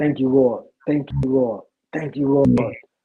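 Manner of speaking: play-acted crying, tearful voice. Retelling getting up after prayer: retelling own tearful thanks. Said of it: "I'm crying, and I just kept saying".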